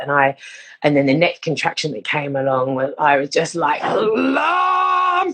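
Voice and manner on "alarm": very high, loud, stretched-out scream. Retelling own outburst during a labour contraction: imitating own loud yell. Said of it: "really loudly".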